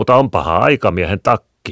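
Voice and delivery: loud, half-proud, teasing, playful boast. A boy answers Leena, who has opened his coat, half boasting, playful. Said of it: "vastasi poika puoleksi kehuen, toiseksi niin leikkisästi".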